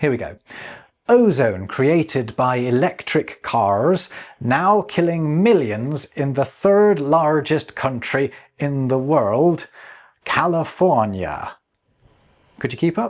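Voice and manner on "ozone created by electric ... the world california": slow, laid-on, put-on American accent. Passing along a quoted line, apologizing in advance: pseudo-American accent. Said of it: "it does rather force me into a pseudo-American accent".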